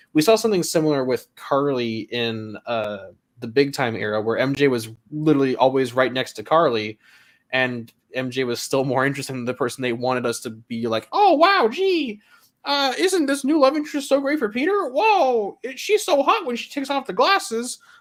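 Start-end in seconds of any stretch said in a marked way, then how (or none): 11.1-17.8 very high, squeaky cartoon voice. Acting out what M J would say about a new love interest, in a Mickey Mouse voice. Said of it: "I don't know why I sound like Mickey Mouse there".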